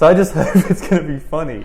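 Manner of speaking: laughing while talking.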